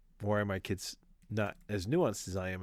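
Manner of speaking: normal talking voice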